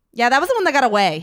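quick, rushed, loud, rattled-off delivery. Retelling a man's answer about unreleased episodes; imitating a fast talker. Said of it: "He kind of talks a little fast".

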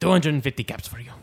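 put-on accent, mix of French and Spanish. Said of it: "I fluctuate between France and Spain".

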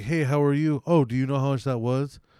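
mock cheerful, happy, friendly voice. Showing how the customer should have asked: imitating a happy friendly greeting.

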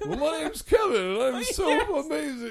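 bad, shrill, squealing, very loud, very high voice. Retelling a bad impression of Kevin done once: impersonating Kevin. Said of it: "my impersonation of Kevin".

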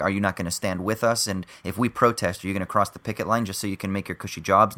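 ordinary talk, nothing marked

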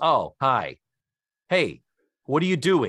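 put-on flat deadpan delivery. Retelling how he greets the camera in an episode, imitating a deadpan delivery. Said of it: "just perfectly deadpan".

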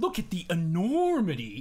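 word enormity stretched out long, slow delivery. Retelling a scene where an actor talks to Riker holding an artifact: drawn-out Patrick Stewart line. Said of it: "he draws the word out".

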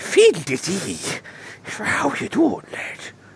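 bad, overdone put-on Irish accent. Imitating a movie actress playing an Irish character: exaggerated stereotyped Irish accent. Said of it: "plays an Irish for a character".

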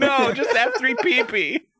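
high, loud, silly giggling voice, squealing.

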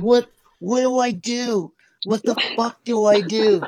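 yelling, high-pitched and panicked.

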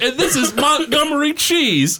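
put-on British accent. Joking about a bootleg cartoon character: Montgomery Cheese British accent. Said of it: "He talks in a British accent".

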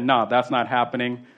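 ordinary talk

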